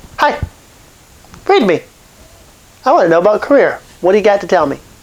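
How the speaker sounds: fast, play-acted doubting, skeptical tone. Speaker retells sitting down with psychics as a skeptic, retelling a skeptical challenge. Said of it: "I'm a skeptic".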